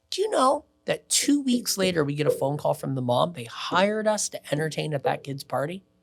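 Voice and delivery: ordinary talk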